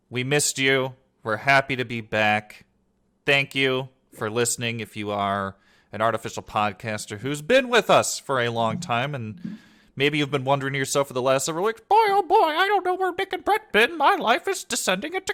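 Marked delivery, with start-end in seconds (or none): 11.8-15.4 cartoon mouse voice, much higher. Speaking as a longtime listener who missed the show, in a Mickey Mouse voice. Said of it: "that sounded like Mickey Mouse actually".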